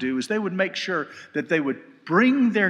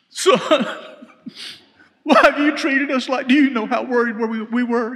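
high, raised, worried scolding tone; 6 semitones higher, 6 dB louder than usual. Reading a mother's words to her lost son as typical mama talk. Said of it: "here comes the typical mama talk".

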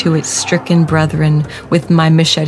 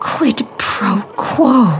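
high, swooping, hissing creature voice; 5 semitones higher than usual. Narrating a story, a creature inches from the narrator's face speaks, hissed. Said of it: "it hissed".

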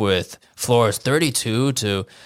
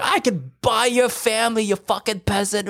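put-on all-out furious rage, very high; 10 semitones higher than usual. Retelling the gist of Marco's reply: imitating someone raging. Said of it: "he was raging really hard".

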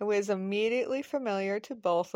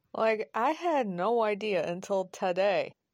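ordinary delivery

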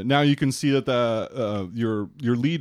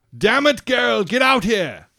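very high, loud captain's hollering call; 12 semitones higher, 7 dB louder than usual. Voicing a captain calling someone out on deck: captain calling out. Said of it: "Captain Sam calls out".

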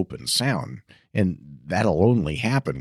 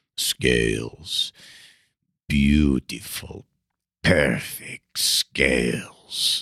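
very slow, low, gruff voice; 3 semitones lower than usual. Imitating a violin teacher at his master classes: Joseph Gingold's low, gruff voice. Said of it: "he had this really low, gruff voice, you know, I'll try to imitate".

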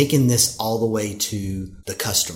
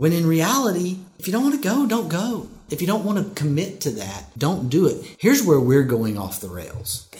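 pitched-up, swooping, lecturing dad voice; 7 semitones higher than usual. Telling listeners to simply say no instead of making excuses, dad voice. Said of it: "He's getting his dad voice".

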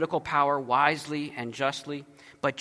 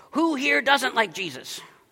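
mock cross, very high, angry delivery; 9 semitones higher than usual. Retelling a remark from the woman at the next table: imitating an angry question. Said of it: "In kind of an angry way".

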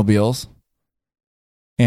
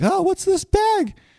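high, slow, drawn-out mock voice. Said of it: "he probably picked it up like".

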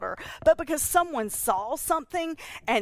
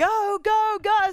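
very high, loud, rallying, cheering yells; 11 semitones higher, 6 dB louder than usual. The speaker quotes a woman recalling a race as it started, retelling a yell. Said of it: "I just started yelling".

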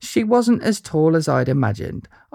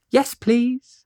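small, slightly squeaky voice, higher pitch; 7 semitones higher than usual. Answering a woman who offers a picture, slight squeak. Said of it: "with a slight squeak again".

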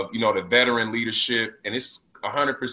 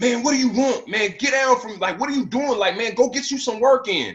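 shrill, very high-pitched shout; 12 semitones higher than usual. Retelling how a teammate on the treadmill yelled: imitating Paul Pierce yelling. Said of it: "he yelled at me".

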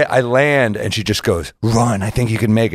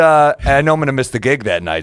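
ordinary talk

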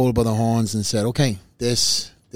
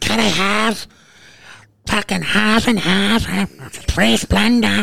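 mock yelling, much higher-pitched; 10 semitones higher, 4 dB louder than usual. Retelling how a friend from Jersey ordered coffee, retelling a friend's yell. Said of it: "They're so violent".

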